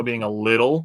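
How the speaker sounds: little hit really hard, very strong stress. Baseball talk on Jackson Chourio being more patient: very strong stress on little. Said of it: "very very strong emphasis on the word little".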